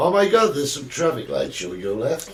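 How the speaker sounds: put-on American accent. Recalling a trip spent talking in an American accent, in a put-on American accent. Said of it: "we spent the entire week with an American accent".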